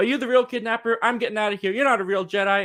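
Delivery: mock frantic, freaked-out, high, panicked blurt. Retelling a girl seeing a wanted hologram: imitating someone freaking out. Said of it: "she just freaks out".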